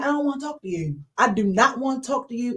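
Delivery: ordinary delivery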